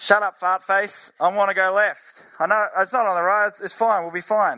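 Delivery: second voice cutting in over the intercom. Telling a joke about a plane, voicing the co-pilot: co-pilot talking over the loudspeaker. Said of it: "another voice on the loudspeaker".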